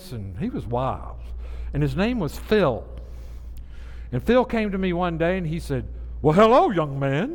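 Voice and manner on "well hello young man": big, loud, dramatic, theatrical preacher voice. Retelling how Phil greeted him one day, in Phil's preacher voice. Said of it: "in a preacher voice".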